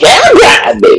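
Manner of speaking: forceful, effortful delivery. Telling another speaker to put more effort into saying a name: emphatic delivery. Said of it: "Put more effort in that voice".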